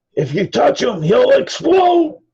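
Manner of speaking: very high, swooping, rising holler. Voicing a character who calls out across a busy market: hollering in character. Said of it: "Goblin and just holler out".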